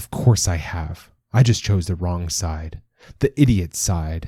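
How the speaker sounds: ordinary delivery, nothing marked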